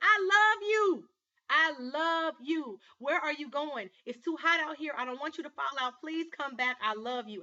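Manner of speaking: loud, high-pitched, tearful begging through sobs. Retelling how a young man begged his girlfriend to come back: imitating a man crying. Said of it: "and he's crying".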